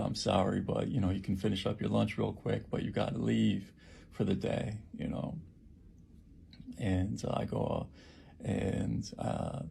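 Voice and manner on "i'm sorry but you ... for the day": usual speaking voice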